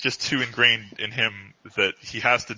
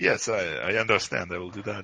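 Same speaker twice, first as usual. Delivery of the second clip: suddenly sounding Russian; 3 semitones lower than usual. Answering Tatiana in character during a roleplay scene: Russian accent. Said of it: "why do I suddenly sound Russian?".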